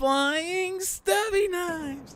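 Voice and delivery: very high, thrilled, super excited hollering. Shouting out card names as the hero Idealist: super excited Idealist shout. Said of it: "She's like".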